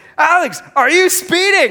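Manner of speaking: very high, loud yelling out. Retelling how the wife yelled a question during the drive: imitating wife yelling.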